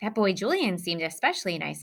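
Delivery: plain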